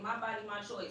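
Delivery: normal talking voice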